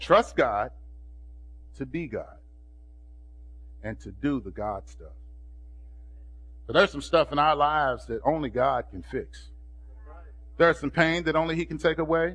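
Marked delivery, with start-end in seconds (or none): 0.0-5.1 very low, very slow, halting, word by word. Repeating a line for someone not writing fast enough, speaking it slow. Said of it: "so I'm going to speak it slow".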